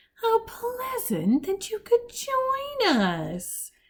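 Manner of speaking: syrupy, very high, sickly sweet sing-song. Reading chapter eleven aloud, voicing the hook-handed man greeting Violet: sickly sweet voice. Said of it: "the hook-handed man said in a sickly sweet voice".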